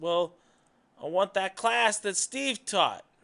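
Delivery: light put-on New York accent. Acting out the boss yelling back to the secretary, in a new york accent. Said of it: "He's got a little, uh, you know, New York accent".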